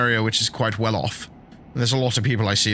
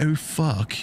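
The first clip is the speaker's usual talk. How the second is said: posh, upper-class way of swearing; 4 semitones higher than usual. Showing how a posh person swears instead: posh way of swearing. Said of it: "when a posh person swears, it's very different".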